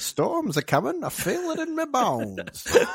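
put-on very high old gold-rush prospector voice. Describing how something sounds, then going full into it: prospector voice. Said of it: "goes full prospector".

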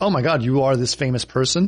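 normal talking voice

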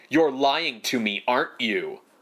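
intense, unhinged, single-note delivery. Imitating an actor playing a woman in mental collapse: Janice Wilson's intense unhinged delivery. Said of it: "sort of talking like this".

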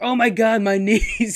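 mock very slow, high, stretched-out yelling. Telling about riding with a friend who yells from the back, retelling a friend's yell. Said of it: "he's just yelling from the back".

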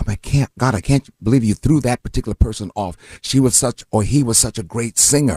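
ordinary delivery

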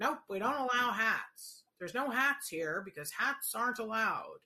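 dense, dim, rigid, inflexible voice. Imitating an inflexible person who bans hats: Joanne's stupid person impression. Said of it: "my impression of Joanne when she does her stupid person".

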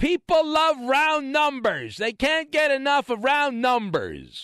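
very high, pesky, annoying chirping voice. The speaker recalls a guy he did a football show with, imitating an annoying former co-host. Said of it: "this little voice of this annoying guy".

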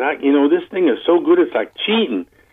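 put-on Southern accent, best attempt. Retelling what a coworker said about the tire compound: imitating a Southern accent. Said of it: "in his best Southern accent".

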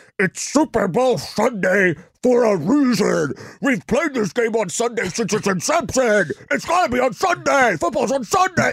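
put-on very high, shrill, loud, coughing grumpy old voice. Predicting pushback from boomers, doing an impression of grumpy boomers. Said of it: "That was my impression of them".

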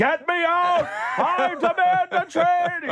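put-on screaming.

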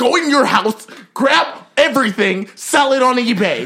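put-on, aggressive, pushy voice, barked high.

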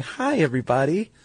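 very high, sugary, fake-sweet put-on voice. Retelling how the producer greeted visiting kids: imitating Jerry's put-on sweet greeting. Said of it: "She put on a real sweet face and was smiling, going".

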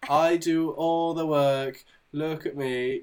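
drawn-out, slow, dripping sarcasm, boastful. Sarcastically retelling how Brie made the show about her job: sarcastic impression of Brie. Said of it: "I am being sarcastic".

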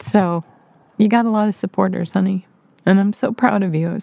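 choked-up voice catching with emotion. Congratulating on the one-year podcast anniversary: choked up. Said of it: "that got me choked up".

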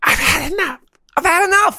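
very high, silly, made-up put-on character voice. Turning a repeated line into a comedy character, in a high-pitched character voice. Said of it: "You gotta do it in a high voice".

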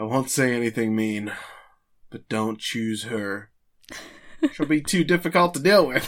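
grave, heartfelt, very serious and earnest. Retelling an anime scene where Conan answers Mitsuhiko, Conan acting real serious. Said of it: "he gets like real serious".

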